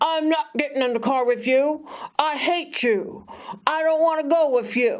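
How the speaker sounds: acted stubborn, defiant, angry child's voice, pitched high. Speaker retelling how a boy refused to get in the car: mock-angry child refusing. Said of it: "He'd storm off".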